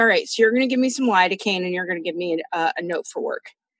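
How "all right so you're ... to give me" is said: ordinary delivery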